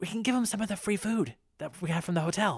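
soft, high, half-whispered voice. Voicing Ellie as she half-whispers into Stephanie's ear; Ellie half-whispering into an ear. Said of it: "Ellie kind of whispers into your ear".

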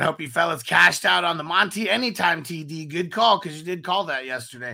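ordinary delivery

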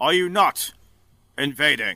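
big, loud booming voice. Voicing a general-like man who approaches everyone, in a loud, booming voice. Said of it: "He goes in a loud, booming voice".

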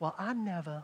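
prim, soft, put-on Southern belle accent. Mocking shocked reactions in church, the speaker puts on a Southern belle voice. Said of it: "like a Southern Belle".

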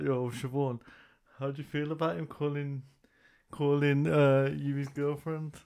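normal talking voice

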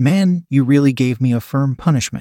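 ordinary talk

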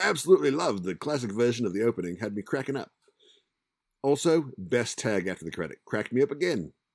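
horrible put-on Australian accent, high and loud. Reading out a message, in a horrible australian accent. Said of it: "I'm still going to include my horrible accent".

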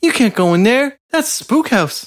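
put-on tiny, very high-pitched little-kid voice. Discussing the film Halloween, quoting a scene, in Tommy's little kid voice. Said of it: "I love his little voice".

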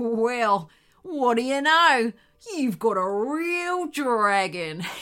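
chuckling, mocking, slow, amused dingo growl. A narrator voices the lead dingo answering the wombat, chuckling. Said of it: "growled the lead dingo".

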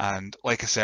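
ordinary delivery

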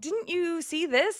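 very high, biting sarcasm. Retelling how he questioned the FBI woman, retelling a sarcastic question. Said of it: "And he's just like so sarcastic".

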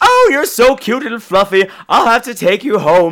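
high, gushing delight. Retelling Uncle Traveling Matt meeting a penguin: mock-delighted Uncle Traveling Matt. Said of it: "he's delighted to meet this penguin".

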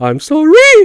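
loud, very high squeaky voice in pain. Retelling a movie scene, a man questioned by cops: imitating high-pitched voice changes. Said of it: "reacting with high-pitched changes in his voice".

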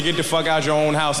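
ordinary talk

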